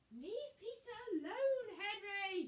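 very high-pitched, loud shouting. Narrating a children's story, a mother calls to her son: shouted. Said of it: "shouted Mum".

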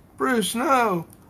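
high, loud yelling.

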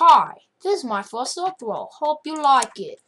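clumsy, bad put-on English accent. Playing a game and greeting viewers: bad English accent. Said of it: "I got English accent".

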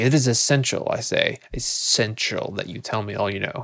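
mock stern, condescending, scolding tone. Retelling how a character spoke down to Holmes: imitating stern, condescending scolding. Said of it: "she's really speaking down to Holmes".

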